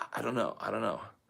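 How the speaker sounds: put-on panicked confusion. Retelling not knowing what year it was when asked, imitating his panicked self. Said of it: "I was really getting panicked".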